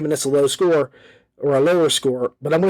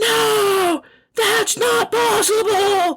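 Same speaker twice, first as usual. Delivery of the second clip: mock very high-pitched yell, first word stretched. Retelling someone voicing an action-figure scene, imitating Luke yelling. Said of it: "That's the voice he uses when he yells".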